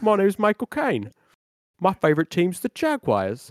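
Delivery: sing-song, swooping put-on voice. Asked to show a Michael Caine without crying, do a Michael Caine impression. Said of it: "Sounds like this".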